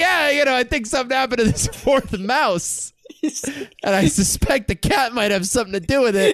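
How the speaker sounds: put-on Brooklyn deli-counterman accent. Playing a character in a game, speaking in a Brooklyn deli owner accent. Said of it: "someone who runs a deli in fucking Brooklyn".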